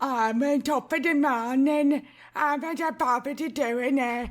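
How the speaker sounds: put-on British Cockney accent. Asked to try a british cockney accent, attempted cockney accent. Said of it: "British Cockney accent".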